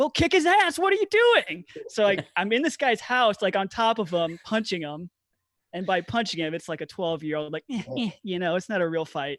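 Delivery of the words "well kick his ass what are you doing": loud, very high, swooping, urging yell. Retelling punching a kid, imitating his brother yelling at him. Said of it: "My brother starts yelling".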